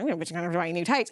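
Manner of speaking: low, grumbling mutter. Retelling how a woman walked out, imitating someone muttering. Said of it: "she's muttering like".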